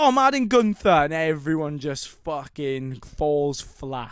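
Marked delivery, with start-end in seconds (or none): 0.0-0.9 put-on very loud, very high-pitched announcer accent. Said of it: "Great accent".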